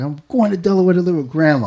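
re-enacted shout. Retelling riding off on a bike and answering his aunt, retelling a yell. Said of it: "And I yelled like".

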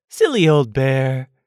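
fond, tender, loving and affectionate tone. Back with a friend, he speaks to the old bear in a loving voice. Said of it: "in such a loving voice".

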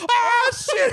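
frightened cry.

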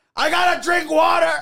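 very high-pitched yell at full blast. Joking about the character Mr. Electrolyte, do a George Lopez yelling impression. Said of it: "however George Lopez talks when he yells".

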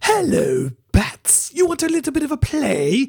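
high, swooping, creepy villain voice. Trying out the voice from the Joker voiceovers, in a creepy Joker voice. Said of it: "his voice is just so creepy. I'll try and do it for you".

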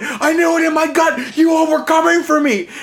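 frenzied, frantic, paranoid, very high-pitched cry. Retelling what a housemate said after grabbing the apple: imitating someone screaming. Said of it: "And he's screaming".

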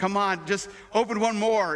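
mock coaxing, begging tone in a male voice. Retelling how a guy pleaded with her all day: mimicking a man pleading. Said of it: "the guy all day was pleading with her".

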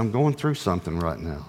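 hushed, secretive, confiding half-whisper. Retelling a private talk in a hot tub, imitating her half-whisper. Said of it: "and she whispered".

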